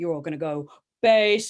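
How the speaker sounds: voice pitched as deep as possible. Speaker leads a group through letter heights, in their deepest voice. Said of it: "use your deepest voice".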